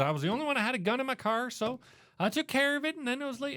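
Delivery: put-on Texas accent, pitched very high. Speaker quotes a woman's story, imitating her texas accent. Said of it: "she had a fantastic Texas ac- Texas accent".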